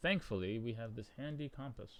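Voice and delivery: deadpan, dry, mocking sarcastic tone. Speaking to the audience, in a sarcastic tone. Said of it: "if you can't hear the sarcasm in my voice".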